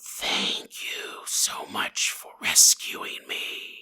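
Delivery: soft, breathy, whispered snake voice. Telling a story about a man and a snake, voicing the snake: snake voice. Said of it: "I'm not going to keep doing that voice".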